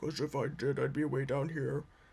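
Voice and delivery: voice dropped way down, straining low. Showing how low the voice would go: trying for a very low pitch. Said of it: "See, I can't get that low".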